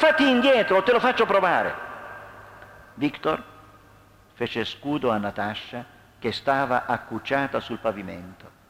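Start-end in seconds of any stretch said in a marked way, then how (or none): 0.0-1.7 shrill, very high, loud yell. Narrator reading a man's threat in a confrontation, shouting. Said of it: "gridò Alex".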